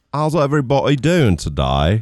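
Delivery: loud, high, put-on British accent. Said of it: "what happened to your British accent?".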